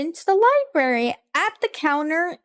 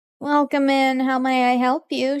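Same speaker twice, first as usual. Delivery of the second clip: bored demoness voice. Voicing a demoness at a library counter greeting a player: bored demoness voice. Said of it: "she's kinda bored".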